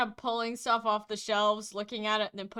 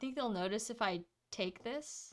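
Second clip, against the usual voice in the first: sneaky, very low, hushed undertone under the breath; 8 dB quieter than usual. Retelling what he said while noting where the guards were, in a very low voice. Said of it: "in a very low voice".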